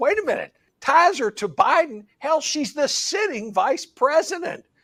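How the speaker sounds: high, incredulous blurted outburst.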